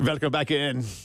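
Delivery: put-on, fake German accent. Welcoming listeners back to the show, in a german accent. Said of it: "my second German accent of the hour".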